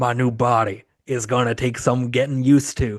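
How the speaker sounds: put-on menacing, ominous villain voice. Retelling a film scene where the possessed man speaks: Eric Roberts voice. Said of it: "I gotta do the Eric Roberts voice".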